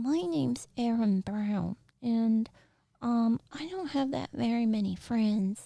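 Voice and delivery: put-on high-pitched small child character voice. Speaker demonstrating the different voices of little kids, little kid voice. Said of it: "like different pitches and stuff".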